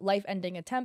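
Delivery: plain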